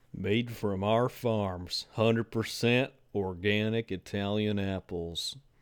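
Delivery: horrible put-on Southern accent. Reviewing a cider, the speaker reads the label aloud in a southern accent. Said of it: "why is in a southern accent now?".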